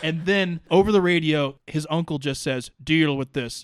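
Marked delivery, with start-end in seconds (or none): none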